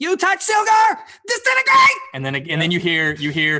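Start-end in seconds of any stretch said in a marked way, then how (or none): 0.0-2.0 very high, shrill, echoing cry with wild swoops. As the Kinku opens its beak in the chamber, a shrill echoing Kinku voice. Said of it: "a shrill voice that echoes out".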